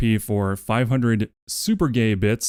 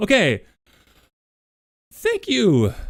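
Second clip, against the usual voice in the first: very high voice breaking up and cracking; 11 semitones higher, 3 dB louder than usual. Thanking everyone during a card game, voice cracking. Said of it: "you guys made my voice crack".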